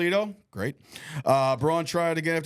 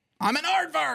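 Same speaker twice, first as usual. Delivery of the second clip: very high, squeaky, mocking voice; 11 semitones higher than usual. Retelling how a commentator mocked a wrestler: mocking Owen Hart voice. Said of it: "he kept mocking out Owen Hart".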